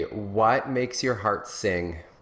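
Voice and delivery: said very simply and slowly. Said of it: "just very simply".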